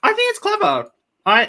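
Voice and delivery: speaking through a full mouth. Giving an opinion on a promo, talking with candy in mouth. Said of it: "I've got Skittles in my mouth".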